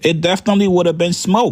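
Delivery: ordinary talk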